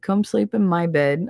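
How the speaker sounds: normal talking voice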